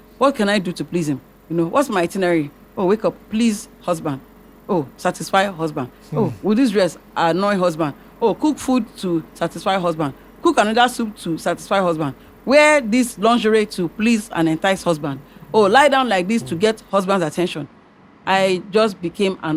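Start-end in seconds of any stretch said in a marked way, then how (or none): none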